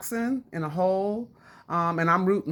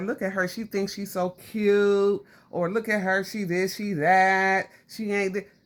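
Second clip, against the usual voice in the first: ordinary delivery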